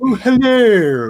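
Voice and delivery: loud, very posh, stretched and drawn out. Showing how different one actor's voices are between roles, do a posh Third Doctor voice. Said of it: "He's just like really posh".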